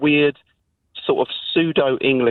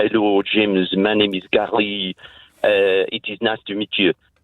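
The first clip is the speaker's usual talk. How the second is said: slow, mocking put-on French accent; 5 semitones lower than usual. Showing how people mock a french speaker: mocking french accent. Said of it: "take the rise out of someone who's French".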